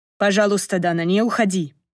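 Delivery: ordinary delivery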